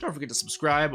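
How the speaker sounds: voice breaking and cracking mid-line. Youtuber asking viewers to subscribe at the end of a video, voice cracking. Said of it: "that was a voice crack".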